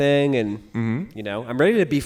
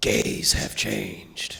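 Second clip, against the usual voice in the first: soft, whispered, hissing snake-like voice; 8 semitones lower, 4 dB quieter than usual. Speaker retelling what some people were saying, in a snake voice. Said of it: "basically like a snake voice".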